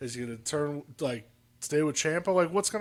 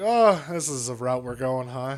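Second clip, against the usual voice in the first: usual speaking voice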